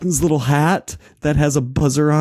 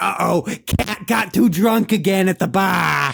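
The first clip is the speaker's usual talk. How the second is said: put-on Boston accent with a mild yelling edge; 4 semitones higher than usual. Retelling a drunk woman from Boston at a bar, imitating a Boston-accent scream. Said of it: "screaming in this Boston accent".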